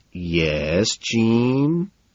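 condescending, two words set apart, "yes" drawn out. [name] answers Jean after she buzzes him, condescending, words spaced out. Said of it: "I ask condescendingly".

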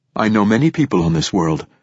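ordinary delivery

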